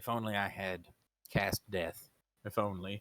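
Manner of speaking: very low, slow, hushed half-whisper. Narrating a game, the speaker voices the bear's reply to a player, half-whispering. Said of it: "he kind of whispers that".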